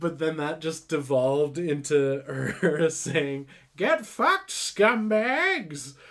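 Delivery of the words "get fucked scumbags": very high, swooping witch voice. Describing a ghost who scares kids, the speaker quotes her: Vera's old hag witch voice. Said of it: "like, old hag witch voice".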